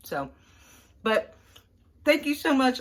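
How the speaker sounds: very loud, high, talking while chewing. Eating while talking to the audience; talking with mouth full. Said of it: "I'm eating with my mouth full".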